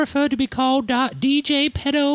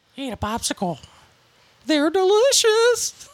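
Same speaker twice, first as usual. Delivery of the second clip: put-on creepy old man voice, coaxing tone; 3 semitones higher than usual. Playing a scene opposite another player, in a Herbert the Pervert voice. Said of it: "you can do a really good Herbert the Pervert".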